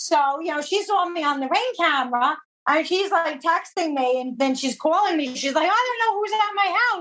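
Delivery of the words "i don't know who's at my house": put-on panicked, frantic voice, pitched up. Retelling a long-term client's phone call about a stranger at her house, flipping out. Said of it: "she was like flipping out".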